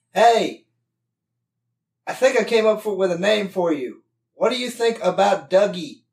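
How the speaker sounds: loud, high yell at full shout. A player's character calls out to the creature: yelling. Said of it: "So I yell at the creature".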